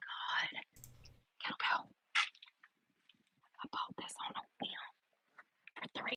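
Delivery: whispered, breathy, very hushed. Showing a kettlebell while trying to be quiet: whispering. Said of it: "Why is she whispering?".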